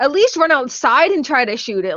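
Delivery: ordinary delivery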